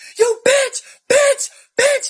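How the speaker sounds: angry screaming, very high, shrill and very loud. Retelling a partner screaming insults in the ear: imitating someone screaming. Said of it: "Like this".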